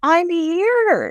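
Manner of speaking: mock, very high yell with "here" drawn out. Speaker recounts hearing her yelling for help in the background; retelling a yell for help. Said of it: "like yelling".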